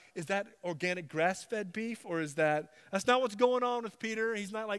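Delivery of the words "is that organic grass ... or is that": plain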